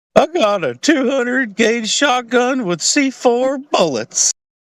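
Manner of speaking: put-on crackly child's voice. Retelling what a kid on the school bus used to say: imitating a kid's crackly voice. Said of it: "he had a crackly voice".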